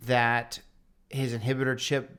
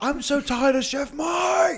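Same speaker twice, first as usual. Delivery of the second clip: put-on drawn-out furious rant, very high, very slow; 5 dB louder than usual. Retelling a chef's line from a show: imitating a raging chef. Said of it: "he rages".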